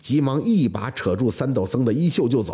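plain reading voice

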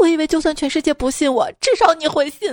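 high, sobbing wail, crying through every word. Telling a joke about a bar standoff, answering the other man, mock sobbing. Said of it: "失声痛哭道".

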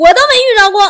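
high, loud laughing outburst.

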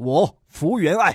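put-on swaggering voice. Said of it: "就是大佬的感觉嘛".

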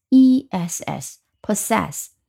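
slow, spelled out letter by letter.

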